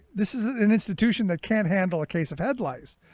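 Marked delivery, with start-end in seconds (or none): none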